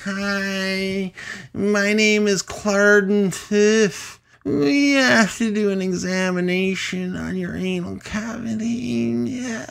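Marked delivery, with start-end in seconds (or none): 0.0-8.6 strange alien voice, very high and slow. Speaker acts out an alien introducing itself, in a high-pitched weird alien voice. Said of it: "high pitched and weird".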